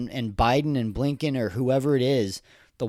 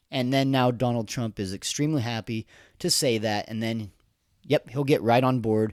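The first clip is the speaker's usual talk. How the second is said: ordinary talk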